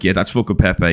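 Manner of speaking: usual speaking voice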